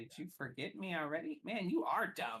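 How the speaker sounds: jeering, snickering, machine-like mechanical goblin voice. Voicing a goblin at the entrance of a player's tent, in a snickering mechanical goblin voice. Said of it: "snickering uh, mechanical goblin".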